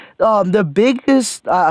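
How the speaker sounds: voice cracks on the word biggest. Reviewing a movie's acting and starting on its biggest problem, voice cracking. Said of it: "I voice cracked there".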